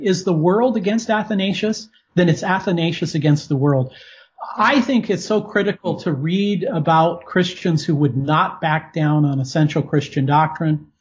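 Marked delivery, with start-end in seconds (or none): none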